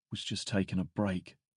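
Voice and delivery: mumbled under breath. Answering him after he grabs the drink and chugs it, mumbled under breath. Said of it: "I mumble under my breath".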